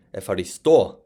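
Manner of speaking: Epharisto with stress on the final syllable o. Modern greek lesson on the stress mark: stress on final o of epharisto. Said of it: "with the stress on the o at the end".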